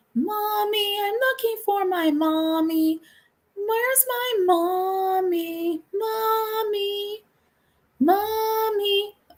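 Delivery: put-on eerie, creepy, very high little-kid voice. Retelling a story where the doctor answers the phone, in a creepy child voice. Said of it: "it's that kid's voice".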